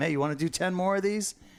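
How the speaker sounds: acted, giggly, teasing voice. Retelling how he teases his clients while they fight tarpon, retelling a giggly taunt. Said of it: "I'll start giggling".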